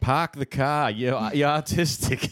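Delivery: put-on Boston accent. Asked to say a line in an accent, trying a Boston accent. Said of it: "That's Boston".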